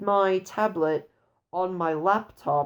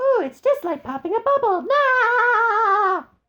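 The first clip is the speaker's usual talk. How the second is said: very high, loud cartoon voice, drawn-out ending; 7 dB louder than usual. Quoting a game character's line after defeating an enemy: imitating SpongeBob. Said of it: "he goes".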